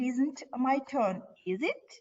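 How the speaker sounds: pitch rises on the tag "is it". Example question tag when expecting an answer: rising pitch on is it. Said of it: "you should uh, raise your intonation on a question, question tag".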